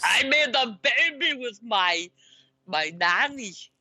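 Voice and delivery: measured, slow action-movie-star delivery, word by word. Joking about a former governor's scandal, then doing a Terminator impression. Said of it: "That's a really good impression".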